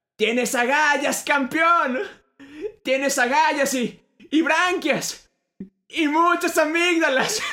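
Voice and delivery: very high-pitched put-on holler. Retelling a movie scene as a balloon rises: imitating Pelusa shouting. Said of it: "y Pelusa grita".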